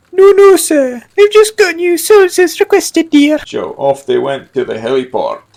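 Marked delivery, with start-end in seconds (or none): 0.2-3.4 very high, jittery, nervous, put-upon secretary voice. A narrator voicing a secretary answering her boss about his shoes: nervous secretary voice. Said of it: "She was very nervous, / She replied as she knocked over her pencil pot. / She was very nervous, / [name] barked orders at his secretary".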